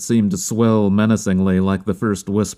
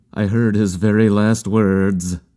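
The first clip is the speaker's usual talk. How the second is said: ordinary delivery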